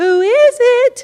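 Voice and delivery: high, slow, sweet Southern voice. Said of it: "with her sweet Southern tenor hospitality".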